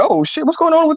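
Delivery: put-on baby voice. Pointing at a baby in a video, speaking as the baby. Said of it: "the baby over here like".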